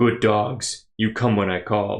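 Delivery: low, deep, scornful mocking jeer. Narrator voices a figure mocking from across the platform, deep mocking voice. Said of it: "a deep voice mocks".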